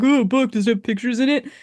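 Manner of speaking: snide, sneering tone dripping with snark. Retelling a movie scene, quoting Maestro: imitating Maestro's snide comment. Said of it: "shitty comments".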